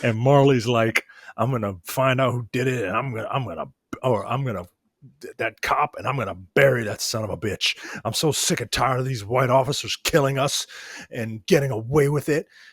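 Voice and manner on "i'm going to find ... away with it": put-on, vacant, determined manner. Recapping a scene, the speaker delivers Marley's line: imitating Kat Graham's vacant determination. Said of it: "trying to seem like determined, but it just comes off as kind of vacant".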